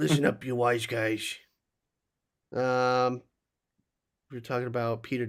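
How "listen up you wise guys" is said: fake rough, gravelly voice. Imitating the big boss guy from a film: put-on gravelly voice. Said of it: "He's like".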